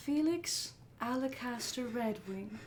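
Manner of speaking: unfamiliar feminine voice, calling out. Narrating a voice the group doesn't recognize as they exit the manor, feminine voice. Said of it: "Feminine voice".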